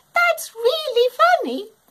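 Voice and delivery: giggling while gasping. A boy beside Gwen's home hears her rhyme, gasping with giggles. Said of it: "He gasped, shaking with giggles".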